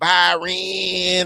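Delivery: put-on very high-pitched, long, drawn-out, stretched-out shout. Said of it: "right, like that".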